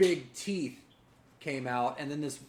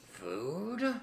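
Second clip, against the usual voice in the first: soft, rough, rasping, gravelly, drawn-out voice; 2 semitones higher, 5 dB quieter than usual. Game master voicing an unseen creature the players hear, in a gravelly voice. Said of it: "you hear in a in a gravelly voice".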